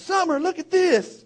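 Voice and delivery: play-acted, very high, shrill calling out. Retelling yelling to a cousin from a tree: imitating own past yell. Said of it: "I'm yelling at my cousin".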